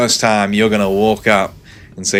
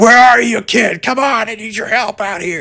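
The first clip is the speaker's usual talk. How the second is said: very high, performed, put-on voice; 13 semitones higher, 3 dB louder than usual. Retelling interview clips of an actor calling for help: imitating Mark Hamill. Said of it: "he goes like".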